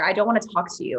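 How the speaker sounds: ordinary talk, nothing marked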